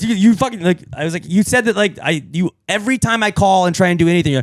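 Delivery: angry, exasperated rant, high and loud.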